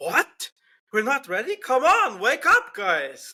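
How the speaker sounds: high, slow, swooping, drawn-out radio-style voice. Acting out a driver's team radio exchange: Carlos Sainz impression. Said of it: "[name]'s gonna do his best impression of what happened".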